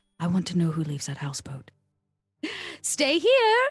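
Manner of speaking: very quiet, hushed whisper. In a role-play, leaning over to another character's ear, whispering very quietly. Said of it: "I whisper as quietly as possible".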